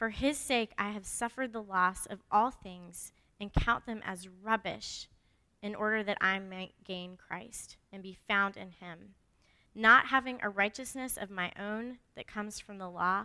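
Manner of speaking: slow, unhurried, deliberate reading aloud.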